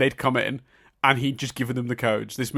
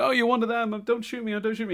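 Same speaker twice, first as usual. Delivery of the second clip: put-on American accent, pitched way up; 11 semitones higher than usual. Retelling a movie scene where a villain poses as a hostage: imitating Hans's fake American accent. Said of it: "he starts doing an American accent".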